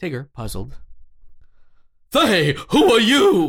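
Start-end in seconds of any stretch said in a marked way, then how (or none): 2.1-3.5 high, drawn-out, swooping sing-song voice. Reading Tigger's line aloud from a script: Ed Wynn impression. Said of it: "Did you just do an Ed Wynn impression accidentally?".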